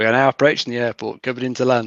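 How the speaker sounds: ordinary delivery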